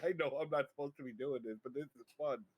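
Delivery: put-on maniacal giggling speech. Retelling what she said while running naked past the door: imitating giggling like a maniac. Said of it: "giggling like a maniac".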